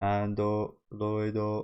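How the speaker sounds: stiff, mechanical, flat monotone android voice. Showing how the word android sounds: robotic voice. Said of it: "I think I'm pretty good at it though".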